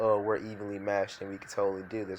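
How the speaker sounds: ordinary delivery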